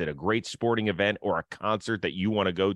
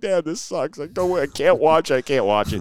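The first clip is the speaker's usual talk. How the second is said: high, loud, tearful sobbing voice; 7 semitones higher, 8 dB louder than usual. Retelling how a young son cried during a losing game: imitating a crying son. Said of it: "is crying his eyes out".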